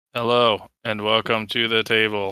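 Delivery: put-on uncaring deadpan voice. Opening the show in a Ben Stein impression, trying to play it straight. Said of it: "like his Ben Stein impression".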